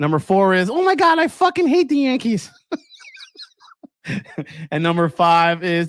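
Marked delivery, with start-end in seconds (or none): 0.7-2.5 very high-pitched motherly voice. Listing the top five things your mom says, do your mom's voice. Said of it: "please do your mom's voice".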